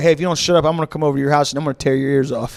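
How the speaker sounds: sinister, menacing threatening tone. Telling a friend about a prank caller, acting out his threats to people who got angry, imitating a menacing prank caller. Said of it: "the guy would be on the phone like".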